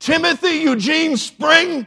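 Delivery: very high, very loud, shrill shriek. Speaker recalling what his mother always called from the house, imitating her shrill shriek. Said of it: "the shrill, shrieking sound of my mother's voice".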